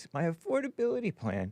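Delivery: soft, fake-sincere commercial voice. Mocking a woman's way of talking about her plan: fake sincere voice. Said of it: "Fake, sincere voice".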